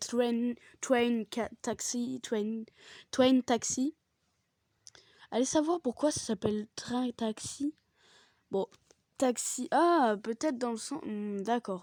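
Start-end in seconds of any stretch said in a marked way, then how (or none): 0.0-3.9 French words in a put-on English accent. Host greeting friends says the name in an English accent. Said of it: "avec l'accent anglais".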